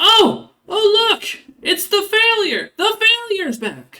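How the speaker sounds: very high, very loud squeaking. Voicing a bird that mimics the player's father, squeaking in father's voice. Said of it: "squeaks out in your father's voice".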